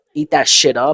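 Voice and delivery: ordinary talk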